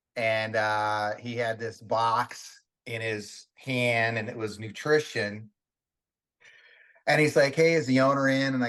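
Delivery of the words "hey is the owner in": nasal, through-the-nose voice. Retelling a skinny visitor asking for the gym owner: imitating a nasal voice. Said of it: "he kinda talked out of his nose".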